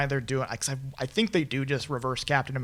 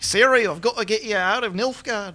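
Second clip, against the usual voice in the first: put-on Australian accent, higher and louder; 7 semitones higher, 5 dB louder than usual. Showing how an actor would say a line: Liam Hemsworth impression. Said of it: "this is how Liam Hemsworth".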